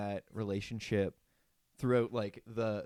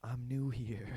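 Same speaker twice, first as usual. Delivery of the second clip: put-on tearful smiling voice; 2 semitones higher than usual. Retelling a TV scene, imitating Daniel smiling on the verge of tears. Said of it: "on the verge of tears".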